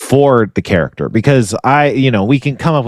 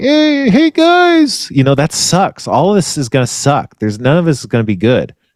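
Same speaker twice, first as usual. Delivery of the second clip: small, sweet, high, swooping cartoon character voice; 5 semitones higher than usual. Trying out a voice they feel comfortable doing: cute little character voice. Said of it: "it's like a cute little character".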